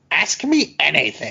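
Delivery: clumsy, bad cartoon villain voice. Quoting a posted video that invites questions: worst Doofenshmirtz impersonation. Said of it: "worst Doofenshmirtz impersonation ever".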